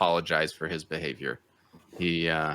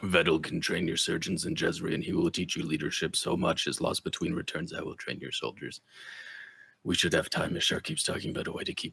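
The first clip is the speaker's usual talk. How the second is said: low, deep rumbling mumble, muttered to oneself; 4 dB quieter than usual. Voicing the muttering heard from inside a wagon: deep, rumbling voice. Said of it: "in a deep, rumbling uh, voice".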